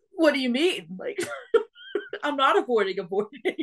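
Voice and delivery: baffled, high-pitched, loud delivery.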